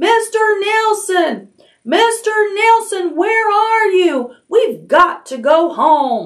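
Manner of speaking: shrill, very high, long drawn-out, top-of-the-lungs shriek. She calls out for a missing companion, shrieking at the top of her lungs. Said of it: "she was shrieking at the top of her lungs".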